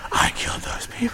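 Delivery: silly, gravelly, dramatic put-on superhero voice. Delivering a dramatic line while still doing the stupid Batman voice. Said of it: "still doing the stupid Batman voice".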